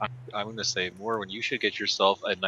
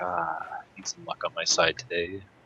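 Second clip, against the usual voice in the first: muttered under the breath, lower pitch; 3 semitones lower than usual. A player's character casts a luck spell while approaching, muttering under breath. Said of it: "mutter under my breath to cast the spell".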